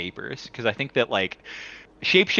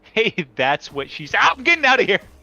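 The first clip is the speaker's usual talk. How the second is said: ordinary talk, nothing marked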